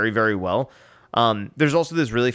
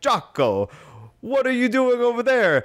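very high-pitched Swedish lumberjack character voice; 12 semitones higher than usual. Retelling a beer commercial with two Swedish lumberjacks: imitating Ielmo, Swedish lumberjack. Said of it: "Swedish lumberjacks that live in this town".

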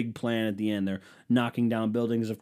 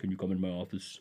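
put-on Russian leader voice, quieter; 3 semitones lower, 8 dB quieter than usual. Imagining a leader calling someone into his office: imitating Putin. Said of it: "I just assume he sounds like this".

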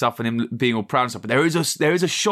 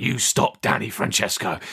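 put-on low raspy villain voice, lower still; 3 semitones lower than usual. Retelling a trailer line, a lot lower than Cockney: imitating Hugh's low raspy voice. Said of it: "in this, like, low, really raspy register".

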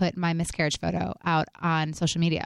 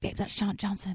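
whisper, much quieter; 2 semitones higher, 7 dB quieter than usual. Retelling what the speaker whispered to a companion: retelling a whisper. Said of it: "And I whispered".

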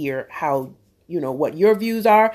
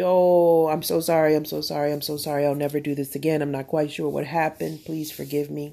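begging, pleading, imploring tone; 4 dB quieter than usual. Acting out someone caught cheating begging their wife: acting out begging and pleading. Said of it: "You beg and plead".

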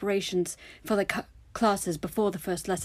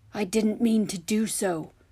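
calm, composed, even, slower. Narrator reading one character's reply to another who shouted at him, calm voice. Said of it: "his voice still calm".

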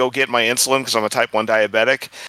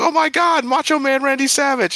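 sudden thrilled gush, very high pitched, excited. Retelling how strangers reacted on seeing a jacket: imitating an excited outburst. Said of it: "blew up".

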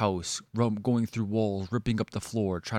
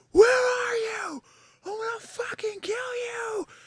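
mock shrill, very high, drawn-out screaming. Telling a story, speaker acts out the man storming through her room, retelling a threatening scream. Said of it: "he was screaming".

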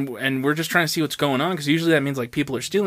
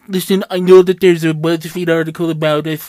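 very loud, put-on teenage-girl voice at full volume; 3 semitones higher, 9 dB louder than usual. Quoting a CEO's letter to workers, imitating CEO as teenage girl. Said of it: "he just sounds like a teenage girl".

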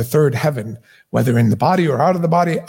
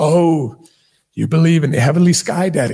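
openly ridiculing, derisive, scoffing, mocking tone. Speaker quoting how atheists mock believers, imitating atheists mocking. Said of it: "hear mockingly".

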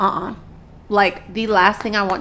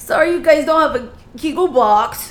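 put-on high, loud, sloppy drunken slur; 6 semitones higher, 5 dB louder than usual. Retelling what Savannah said while drunk, imitating drunk Savannah. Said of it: "Savannah drunkenly sounded like this".

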